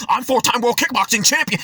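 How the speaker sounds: poorly done macho bragging swagger voice. Mocking men who boast they can fight, in a terrible Andrew Tate impression. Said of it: "That was a terrible Andrew Tate impression".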